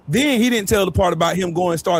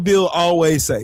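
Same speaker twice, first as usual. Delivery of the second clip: ordinary delivery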